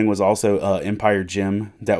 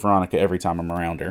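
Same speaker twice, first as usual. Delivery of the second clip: ordinary talk, nothing marked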